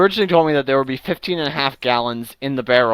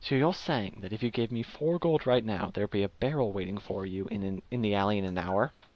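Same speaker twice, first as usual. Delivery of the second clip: lowered, very quiet, very hushed low murmur; 4 semitones lower, 12 dB quieter than usual. A character repeats a deal back to the buyer, lowered voice. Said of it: "He lowers his voice again".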